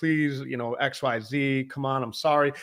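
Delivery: put-on child voice, begging and pleading. Retelling how a kid on a boat begged a charter captain: imitating a kid begging. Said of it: "you can hear him, like, begging".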